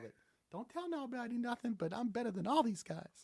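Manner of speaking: very high, very soft, confident, barely above a hush. Recalling a player the speaker covered, Lawrence Moten impression. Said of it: "That's my best Lawrence Moten".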